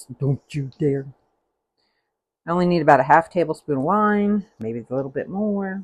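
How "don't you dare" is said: scolding mother voice. Warning against food waste while cooking: mom voice. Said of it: "Use my mom voice".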